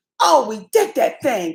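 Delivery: mock thrilled, gushing little burst of delight. Describing their reaction when they manage the tech: imitating being so excited. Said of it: "we be so damn excited".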